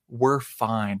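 put-on sarcastic tone. Retelling the reply to rival fans: imitating own sarcastic reply. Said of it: "I always sarcastically".

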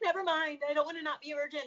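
acted high, frantic, flustered, panicked freaking out. Retelling own past reaction to something from high school: imitating own past freak-out. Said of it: "like, a freak out".

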